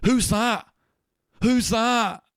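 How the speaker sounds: sudden, very high, loud, drawn-out shout. Describing a video, the speaker acts out a guy who spots the owl man, imitating a guy shouting. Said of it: "he just shouts".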